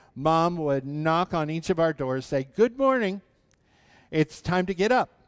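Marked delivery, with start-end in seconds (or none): 2.6-5.0 mock bright, sunny voice, high and cheery. Recalling how Mom woke the kids on school mornings: imitating Mom's cheery voice. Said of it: "She always had that cheery voice".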